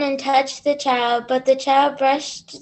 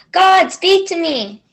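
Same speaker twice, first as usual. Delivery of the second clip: put-on full-throated, loud child's yell; 4 semitones higher, 5 dB louder than usual. Playing the child's part in a story read aloud, cued for a yelling voice: yelling. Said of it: "get ready for your yelling voice".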